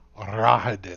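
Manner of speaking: venomous, sneering, nasty, spiteful tone. A character names the man he calls a bastard, in a nasty tone. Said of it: "He says in a nasty tone".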